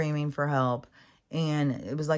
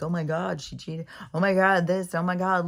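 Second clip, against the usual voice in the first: put-on snickering; 3 semitones higher than usual. The speaker retells a guy videotaping the scene nearby; imitating someone snickering. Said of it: "kind of snickering".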